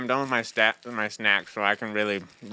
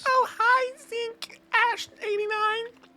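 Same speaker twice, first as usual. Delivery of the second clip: very high, put-on girlish voice. Player voicing her in-game greeting while playing, in a put-on girl voice. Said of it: "My girl voice".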